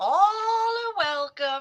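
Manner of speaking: acted small woman's voice. Greeting the audience on a show: little lady from Poltergeist voice. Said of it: "You sounded like the little lady from Poltergeist".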